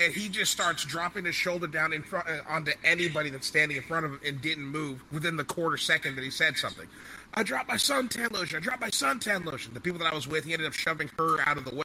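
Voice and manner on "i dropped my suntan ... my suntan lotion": play-acted high-pitched yelling, repeated over and over. Telling about a man shoving through a crowd, imitating someone yelling. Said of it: "starts yelling out".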